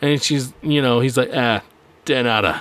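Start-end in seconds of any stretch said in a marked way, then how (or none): 1.3-2.6 very deep bass voice, pitched way down. Imitating an actor's deep-voiced line from a show: imitating Patrick Warburton's deep voice. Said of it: "because of his deep-ass voice".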